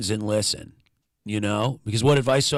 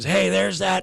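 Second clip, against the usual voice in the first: put-on cheery, high, friendly yell; 8 semitones higher than usual. Speaker retells a guy popping his head out the door: retelling a scream. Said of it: "Pops his head out the door and screams".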